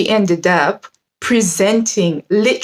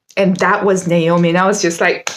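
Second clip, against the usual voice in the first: ordinary delivery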